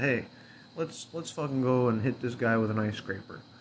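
normal talking voice

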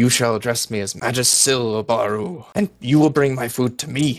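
seething, wrathful, very angry delivery. Narrating a scene, the speaker voices a figure turning on Obaru, very angry. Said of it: "says very angrily".

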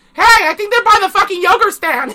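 shrill, piercing yell, very high and loud. Speaker recounts a character shouting into a crowd of reporters, retelling a yell. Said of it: "basically yelled".

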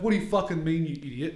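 mock furious, outraged, arced-up angry outburst. Retelling how a brother angrily sat up off the couch: imitating Jed angrily arcing up. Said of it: "he immediately fucking arced up".

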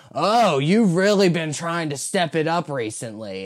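grating, annoying, pointed tone. Speaker mimics a man's early-morning comment to her: mimicking how he says it. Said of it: "it's in the way he says it".

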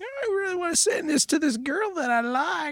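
put-on very high, soft, squeaky teen voice. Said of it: "Adam's like".

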